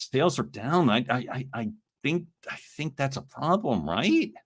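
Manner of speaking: slow, faltering, stammering, hesitant with stumbling restarts. Example of reporting that sales are down, hesitant and stammering. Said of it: "If you sound like you're guessing or flailing ... Let me give you an opposite example".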